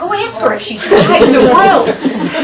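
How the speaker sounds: slow, drawn-out, teasing storyteller voice. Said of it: "he goes".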